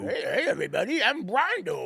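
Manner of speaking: high, goofy voice. Riffing on the nickname Brondo, the speaker does an Adam Sandler character voice. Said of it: "That sounds like an Adam Sandler character".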